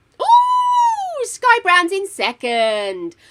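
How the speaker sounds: high-pitched, loud, thrilled, excited shout.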